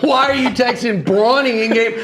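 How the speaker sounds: high, laughing, mock outraged tone.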